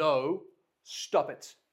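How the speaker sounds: very loud parent voice. A parent showing how they calm their kids down, in a dad voice. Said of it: "I can use a dad voice to go".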